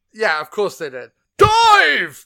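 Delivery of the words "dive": put-on booming actor voice, higher and louder. Praising an actor by quoting his line: Brian Blessed impression. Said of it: "He talks like this".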